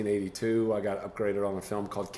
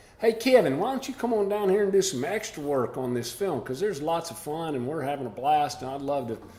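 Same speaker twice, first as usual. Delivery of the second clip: high, twangy put-on voice; 6 semitones higher than usual. Retelling what a film's lead said, in his voice: twangy put-on voice. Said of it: "he said in his twangy voice, I'll try to do it justice".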